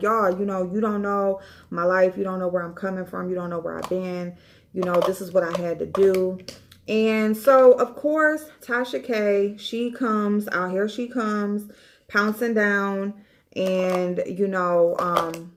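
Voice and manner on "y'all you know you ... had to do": crying hysterically with a tearful, pleading tone. Retelling a woman pleading her case on video: imitating someone crying hysterically. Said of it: "she was crying and she was hysterical".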